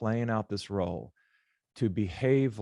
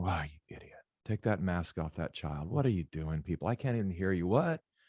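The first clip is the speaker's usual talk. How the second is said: put-on muttering under the breath, quieter; 2 semitones lower, 4 dB quieter than usual. Retelling muttering at people in a shopping mall: imitating muttering under breath. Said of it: "under my breath just going".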